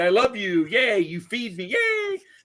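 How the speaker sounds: super happy, gushing, high, swooping dog voice. Imitating a dog from a cat and dog video: imitating a super happy dog. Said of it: "every dog is, like, super happy".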